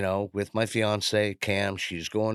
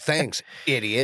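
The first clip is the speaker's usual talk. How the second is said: put-on indignant voice, pitched higher; 5 semitones higher than usual. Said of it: "went Karen on me".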